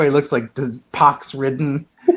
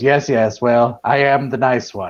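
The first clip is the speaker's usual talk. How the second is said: put-on stodgy, stuffy old official voice, slower; 2 semitones lower than usual. Retelling a Time Bandits scene to others, in a stodgy old bureaucrat voice. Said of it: "bureaucratic, kind of stodgy old guy".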